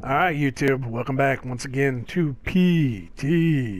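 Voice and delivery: low, creepy put-on voice. Opening a Halloween Resident Evil playthrough video, greeting YouTube in a creepy voice. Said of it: "Is that your creepy voice?".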